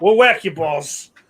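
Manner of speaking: put-on, fake Boston accent. Joking about a different sport for golf clubs, saying it in a put-on Boston accent. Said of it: "I start talking like I'm from fucking Boston".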